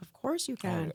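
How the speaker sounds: mock touched, heartfelt, emotional tone. Retelling a husband's reaction when the son asked to call him dad: imitating an emotional reaction. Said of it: "he got so emotional".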